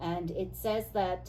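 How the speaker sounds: ordinary talk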